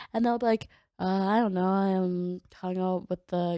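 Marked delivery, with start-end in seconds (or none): 1.0-3.6 mock, flat, monotone delivery. Speaker complains about guys' short answers, imitating a monotone guy. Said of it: "it's just like so monotone".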